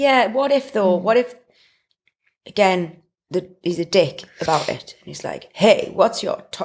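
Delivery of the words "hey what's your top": put-on smug, cocky American bro accent. Imagining how a guy might answer, American accent. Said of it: "why is he American?".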